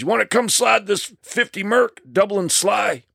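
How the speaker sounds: rough, gravelly he-man voice at very high pitch. Retelling what Terry said to him after he quit a TV show: gravelly macho Terry impression. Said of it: "So he's got this gravelly voice".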